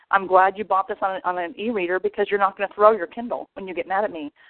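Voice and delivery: ordinary talk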